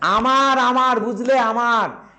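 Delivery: forceful loud shouting. Retelling someone shouting in front of Natalia, waving hands: shouting loudly. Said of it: "চিৎকার করে বলছে ... এইভাবে বলছে".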